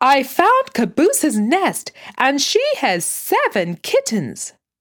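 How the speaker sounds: sudden, high, loud blurted announcement. A child, unable to wait, bursts in with news for the family: bursting out. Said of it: "Benji burst out".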